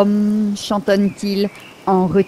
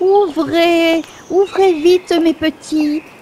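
high-pitched fake goat voice; 9 semitones higher than usual. Narrator reads Igor calling the young goats, imitating the goat's voice. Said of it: "en imitant la voix de la chèvre".

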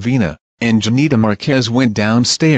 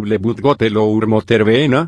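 ordinary delivery

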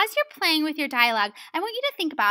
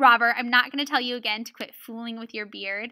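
usual speaking voice

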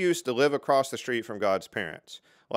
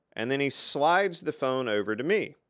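normal talking voice

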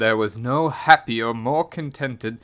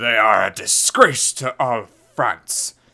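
openly angry man's voice. Hearing a complaint about mice, a man responds angrily. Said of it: "said a man angrily".

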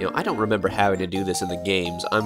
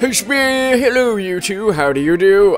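put-on old man voice, much higher, louder; 11 semitones higher, 8 dB louder than usual. Voicing a character who greets two visitors: old man voice. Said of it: "only one old man voice in my arsenal".

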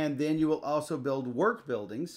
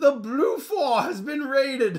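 shrill, very loud, high town crier call; 13 semitones higher, 8 dB louder than usual. In a game, the town crier announces a raid, loud town crier call. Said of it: "I do the town crier voices".

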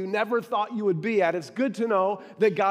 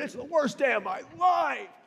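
put-on emphatic voice, higher; 5 semitones higher than usual. Retelling a clerk's answer when asked about his day: imitating a clerk leaning into it. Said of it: "He leaned into it".

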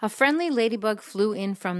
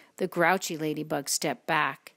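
ordinary delivery

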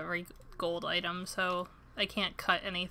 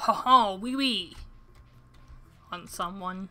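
cheap fake French accent, slower; 5 dB louder than usual. Trying out voices for a game character, really cheap French accent. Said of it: "really cheap French accent".

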